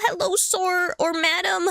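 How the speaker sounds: failing voice. Quoting polite children greeting a stranger at the door, voice giving out. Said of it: "My voice is dying".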